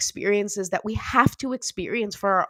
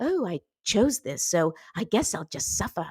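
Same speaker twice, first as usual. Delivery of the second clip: vague, unplaceable put-on British accent. Mimicking what someone tells themselves, put-on british accent. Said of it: "I don't know what British accent".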